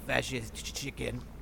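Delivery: muttered under the breath. Heading towards the door in the game, the speaker says it under the breath. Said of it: "under my breath".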